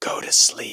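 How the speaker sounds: hushed, eerie whisper.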